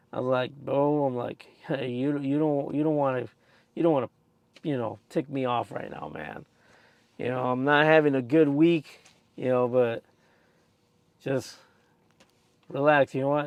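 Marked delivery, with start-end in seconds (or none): none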